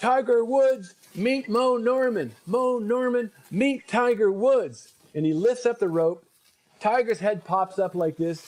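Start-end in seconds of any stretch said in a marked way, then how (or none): 0.0-4.9 acted, slow, drawn-out, high-pitched announcer bellow. Telling a golf story, acting out a man introducing two players, retelling a yell. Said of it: "he yells out with the top of his lungs".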